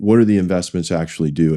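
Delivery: normal talking voice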